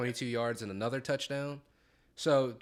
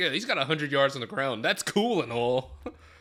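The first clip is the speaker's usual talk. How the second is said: mocking, teasing voice; 6 dB louder than usual. Teasing the other speaker by repeating his line: mocking imitation of the other speaker. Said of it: "it was just funny the way you said it".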